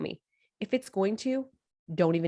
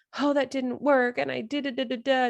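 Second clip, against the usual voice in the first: upset, discouraged, emotional lament, pitched up; 5 semitones higher than usual. Showing a discouraged way of reacting to failure: acting emotional. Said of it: "the first one, you sounded emotional".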